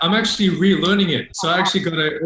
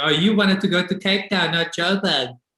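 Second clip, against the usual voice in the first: ordinary delivery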